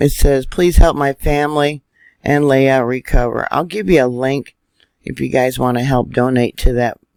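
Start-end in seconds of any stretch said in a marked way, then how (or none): none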